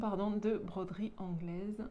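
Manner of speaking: ordinary talk, nothing marked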